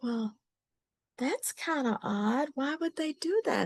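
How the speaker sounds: sweet-toned voice. Retelling what an older cousin said on the phone: imitating a sweet high voice. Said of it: "she had a real sweet high voice".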